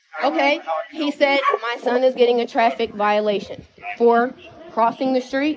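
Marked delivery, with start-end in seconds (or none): none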